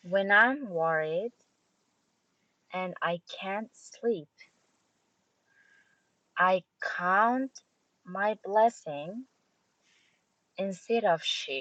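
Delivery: pausing after every one to three words. Reading lyric lines aloud as the coach asked: pausing every one to three words. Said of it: "stop every one to three words or so".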